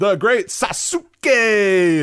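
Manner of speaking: high, drawn-out ring announcer call.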